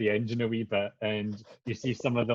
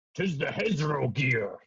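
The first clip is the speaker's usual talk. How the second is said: very rough, growly, gruff character voice; 3 semitones higher than usual. Narrating a game, voicing a Kenku looking up from the vehicle: very gruff voice. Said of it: "says in a very gruff voice".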